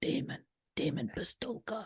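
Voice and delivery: hushed, breathy, whispered gangster-style voice. Telling the guest how the name sounds to them, saying it in a gangster voice. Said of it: "it sounds like a gangster, and I want to say it like".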